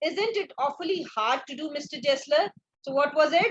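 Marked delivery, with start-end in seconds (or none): none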